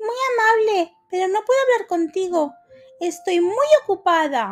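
with disdain. Narrating a fable, the little mouse turns away a neighbour who greets her, disdainful. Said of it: "le dijo con desdén la ratoncita".

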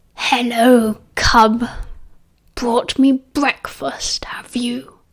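dreadful growl in a breathy whisper. Narrator voicing Greyback greeting Remus, in a dreadful growling voice. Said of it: "that dreadful growling voice".

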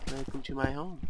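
ordinary talk, nothing marked

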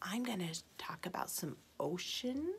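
unvoiced, secretive whisper.

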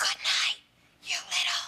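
put-on loud stage whisper. Telling Jenny what the speaker's mom said at night: retelling a stage whisper. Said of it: "in a stage whisper".

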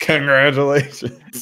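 mock harsh, combative, aggressive, high-pitched. Repeating how the other person said congratulations, mimicking an aggressive tone. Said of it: "You said that so aggressively. Like".

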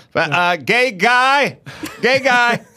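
high, slow, drawn-out calling out. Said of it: "So he's like".

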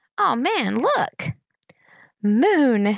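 put-on little girl's voice, cheerful, delighted, sing-song. Climbing out into fresh air, a little girl points to the sky, happily. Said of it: "said Boots happily".

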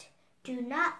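ordinary delivery

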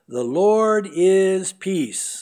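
slow, solemn, loud, drawn-out declaiming.

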